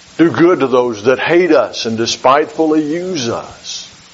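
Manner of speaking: ordinary talk, nothing marked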